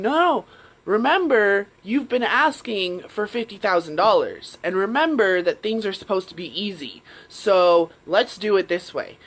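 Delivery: booming deep voice. Retelling a second inner voice that argues back: imitating a lower, louder, deeper voice. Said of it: "this louder voice came in".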